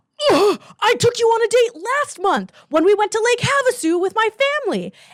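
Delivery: play-acted, high-pitched yelling. Retelling the partner's reply in the argument: imitating a partner yelling back. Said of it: "he starts yelling back and he said".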